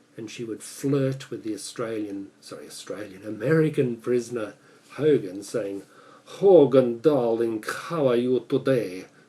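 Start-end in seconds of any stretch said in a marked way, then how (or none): 6.3-9.0 put-on loud, throaty Russian accent from the back of throat. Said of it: "emphasize that Russian with the back of the throat".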